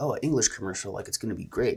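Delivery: plain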